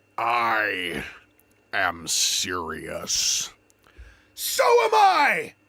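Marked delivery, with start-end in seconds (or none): 4.4-5.4 very high-pitched, shrill yelling. Answering back in an acted quarrel: shouting. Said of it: "Stop shouting!".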